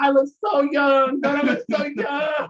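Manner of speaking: very high, loud, vain, showing-off bragging voice. Retelling what a friend says after grad school: imitating Darren. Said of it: "He be laying on the bed like".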